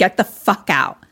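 put-on angry voice. Retelling how Tara orders someone out: imitating pissed-off Tara. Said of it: "Tara is, like, pissed".

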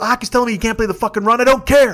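mock yelling, rattled off fast and high. Retelling what he yelled at him about making the trade, retelling a yell. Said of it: "I'm yelling at him".

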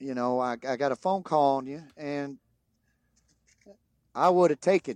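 put-on Southern drawl. Retelling what a coach once said, in a southern drawl. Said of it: "Southern drawl".

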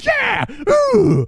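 very high, loud, ecstatic freak-out cheer. Retelling a movie scene where he makes the putt: imitating Shooter McGavin freaking out. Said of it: "he's just so freaking out".

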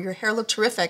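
ordinary delivery

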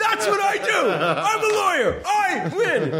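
high mock yelling with laughter.

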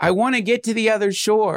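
put-on high yelling. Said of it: "he yells to his teacher".

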